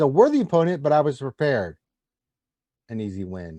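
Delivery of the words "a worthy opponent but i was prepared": ordinary delivery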